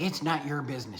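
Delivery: mock yelling. Retelling how a woman came up the aisle yelling: imitating someone yelling. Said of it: "she's just yelling at me".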